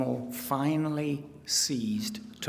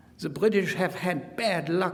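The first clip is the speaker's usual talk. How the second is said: put-on German accent, pitched higher and raised; 7 semitones higher, 5 dB louder than usual. Quoting Rommel on the day Tobruk surrendered, in a mock German accent. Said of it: "I'm speaking with a mock German accent".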